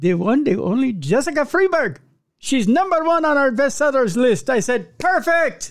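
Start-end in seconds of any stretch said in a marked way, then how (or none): 0.0-4.5 poorly put-on Indian accent, pitched up. Retelling what the Hindustan Times said while introducing an author, in a bad Indian accent. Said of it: "Forgive me for the bad Yay! accent".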